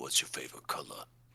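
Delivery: hushed, breathy whisper, barely voiced. Leaning over to another character to ask a question: whispering.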